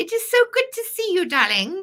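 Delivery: horrible put-on British accent, very high pitch. Greeting a viewer from the comments in a bad put-on British accent. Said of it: "That's my horrible attempt at a British accent".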